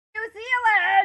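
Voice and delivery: sudden, shrill, very high, loud scream. Describing Jason's habit of walking around yelling, imitating Jason screaming. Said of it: "randomly scream".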